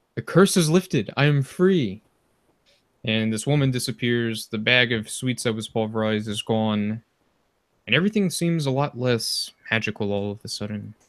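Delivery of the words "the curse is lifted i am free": huge, booming, echoing, reverberating shout. Narrating a game scene, voicing a freed spirit's cry as an echoing, booming shout. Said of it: "this echoing, booming voice shouts".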